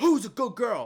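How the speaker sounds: very loud, high-pitched, harsh, aggressive scolding yell. Speaker re-enacting how they tested their dog, retelling a yell at the dog. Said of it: "I yelled at her saying like".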